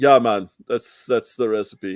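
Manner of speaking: put-on low Jamaican-accented voice. Retelling a guy answering a horrified chemist, in a put-on Jamaican accent. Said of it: "I don't know why he sounds Jamaican".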